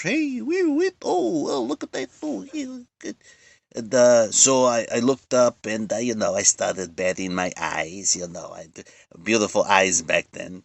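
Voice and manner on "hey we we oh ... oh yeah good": very high, whooping catcall-like hollers. Retelling how the Stooges reacted on set: imitating the Three Stooges catcalling. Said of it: "they start whistling".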